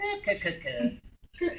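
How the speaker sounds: tight, nasal cooing voice, tightened at the back. Explaining how the voice is made, showing the tight nasal Cthulhu voice. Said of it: "Cthulhu starts by narrowing and tightening up in the back".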